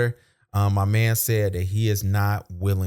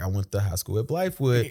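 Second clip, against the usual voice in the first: ordinary delivery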